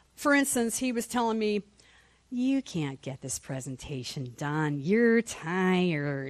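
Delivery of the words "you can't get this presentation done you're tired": low, slow, devilish taunting voice, "tired" drawn out. Recounting what the devil told them, in a devil voice. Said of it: "That's my devil voice again".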